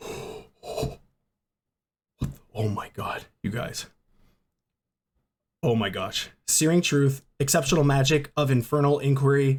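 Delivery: voice shaking with excitement. Opening a card pack and spotting a special card: shaking with excitement. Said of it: "I'm shaking".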